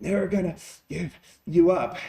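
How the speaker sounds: goofy, silly voice, slightly creepy. Explaining voices people can use, the speaker demonstrates a line in a silly creepy voice. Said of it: "that sounds a little creepy".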